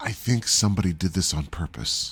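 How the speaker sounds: confiding, secretive whisper. Voicing a character who leans in so no one overhears: in-character whisper. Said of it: "leans into Andrea and whispers".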